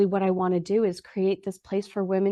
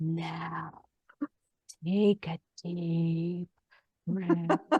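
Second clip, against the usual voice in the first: very slow, halting, soft, breathless sultry voice; 3 semitones lower, 6 dB quieter than usual. Retelling a woman's sudden line that ruined the moment, imitating a sexy breathless voice. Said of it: "in like the sexiest, breathless type of voice".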